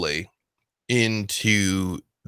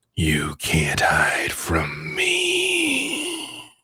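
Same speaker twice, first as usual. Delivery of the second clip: monster dragon voice; 4 semitones lower than usual. Voicing a dragon who answers a thrown voice: dragon voice. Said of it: "it's a dragon and probably a Dracolich".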